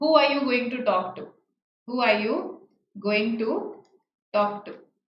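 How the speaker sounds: ordinary delivery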